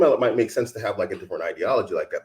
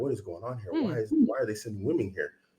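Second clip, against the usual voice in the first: put-on upset, bewildered, swooping disbelief; 8 dB quieter than usual. Retelling a russian soldier's words from a trench video: imitating a dismayed soldier. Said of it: "you can hear it in his voice. He doesn't like it".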